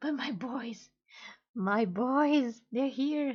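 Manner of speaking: overexcited, very excited, gushing, barely contained. Seeing her boys again after a long time, very excited. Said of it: "Sorry, sorry, I'm so excited".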